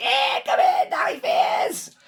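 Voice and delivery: very high-pitched, squealing goblin screech. Running the game, the speaker voices the goblins answering a challenge: screeching goblin voice. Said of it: "the goblins screech like".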